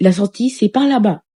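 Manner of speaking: cheeky, insolent, condescending talking-down tone. Retelling how a man at the shop pointed them to the exit, mimicking an insolent tone. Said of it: "Avec un ton insolent".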